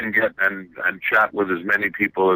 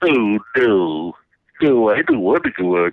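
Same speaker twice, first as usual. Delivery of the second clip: put-on cartoon character voice. Asked about the cartoon Droopy, the speaker answers in a Droopy voice. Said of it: "he did a voice very similar to that".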